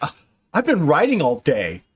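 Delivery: teasing, mocking take-off in sing-song tone. Teasing the players by imitating Robin's complaint: mocking imitation of Robin. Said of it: "Robin is all like".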